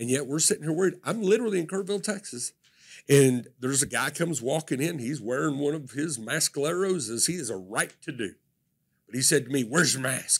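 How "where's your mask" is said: put-on muttering under breath. Retelling a stranger's question about a mask: imitating someone muttering under breath. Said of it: "he said it under his breath".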